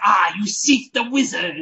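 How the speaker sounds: slow, put-on olde-worlde medieval Cockney accent. Imagining a hotel bellhop's voice suddenly changing: medieval Cockney accent. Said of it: "medieval Cockney accent".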